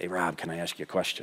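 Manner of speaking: very low, very quiet, hushed under-the-breath murmur. Retelling a man walking up to ask Rob a question, imitating his low quiet voice. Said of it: "he kind of has that low, quiet voice".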